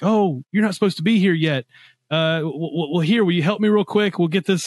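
stammering announcer voice over an intercom. Describing a game to another speaker, imitating a game's intercom voice. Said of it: "there's this intercom voice that's like".

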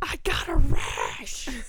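scared, high, very loud, very slow, drawn-out shriek. Retelling how she kicked the bathroom door, retelling a scream. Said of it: "And kicks the door and screams".

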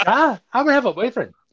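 broadest, thick Scottish brogue, pitched very high. Imitating a four-year-old girl, in the world's thickest scottish brogue. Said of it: "Like the world's thickest Scottish brogue".

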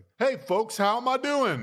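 very high, sing-song, swooping call-out. Retelling a mayor walking into bodegas: imitating Koch. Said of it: "go into bodegas and be like".

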